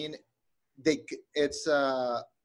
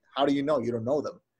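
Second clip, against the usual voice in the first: put-on flat, deadpan delivery. Speaker retells a woman's answer to a man's claim about her, mock-deadpan reply. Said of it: "she very deadpan tells him like".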